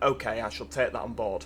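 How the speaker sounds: ordinary talk, nothing marked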